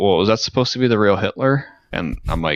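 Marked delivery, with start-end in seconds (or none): none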